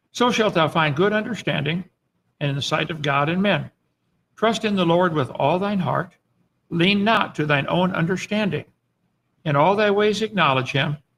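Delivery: ordinary talk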